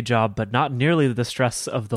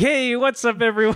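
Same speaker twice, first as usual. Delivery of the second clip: high, bright mock podcast intro voice. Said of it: "and then we're like".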